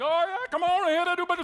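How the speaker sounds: put-on yelling. Retelling a fight with a customer: imitating own yelling. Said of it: "yelling at her".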